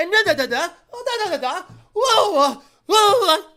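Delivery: big, shrill and loud voice. Complaining about a YouTuber's crazy gestures, the speaker mimics him: MrBeast impression, overly animated. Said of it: "He talks like this".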